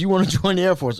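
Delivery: amused, chuckling, laughing through the words. Retelling the reply to wanting to join the air force: imitating a chuckling question. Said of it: "with a chuckle".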